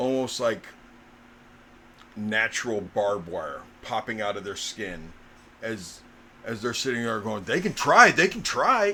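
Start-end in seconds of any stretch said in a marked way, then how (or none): 7.4-9.0 very loud, pitched-up, agitated, upset outburst. Voicing a figure as thorns burst from their skin: upset. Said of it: "getting upset".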